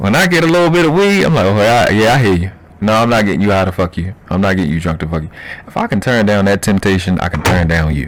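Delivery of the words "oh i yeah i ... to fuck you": normal talking voice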